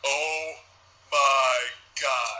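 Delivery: anger turning into fright. Recapping a SmackDown segment where a man backs against a wall, imitating someone frightened. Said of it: "his shit turns from anger to fear".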